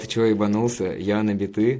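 ordinary talk

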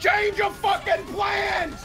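urgent shout, high and slow.

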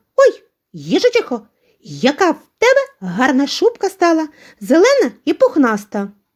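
high-pitched, admiring, delighted exclamation. A young hare meets the hedgehog on her way home, delighted exclamation. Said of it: "захоплено вигукнула".

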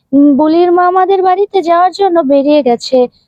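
ordinary delivery

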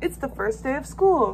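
ordinary delivery

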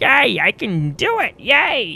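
strange high swooping sing-song voice, very drawn out. Playing a game, the speaker shows off the voices lately being done: weird voice. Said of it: "doing some weird voices".

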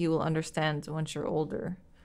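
ordinary delivery

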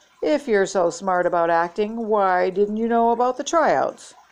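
plain reading voice

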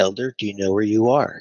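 sweet, sugary little voice. Retelling a woman at church pulling the speaker aside, imitating her sweet little voice. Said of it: "in her sweet little voice".

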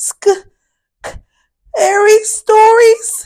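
uneasy, anxious tone. Fitz, the baby brother, answers his sister Fiona, nervously. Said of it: "Fitz asked nervously".

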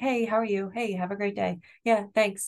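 breezy, light, polite, easygoing tone. Demonstrating for parents the tone used greeting someone on an elevator: light polite elevator tone. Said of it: "It's called the elevator tone of voice".

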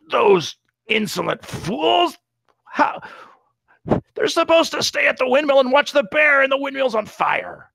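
very mean, very high goblin voice. A large goblin in the back gestures toward the windmill, very mean goblin voice. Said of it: "in a very mean voice and goblin says".

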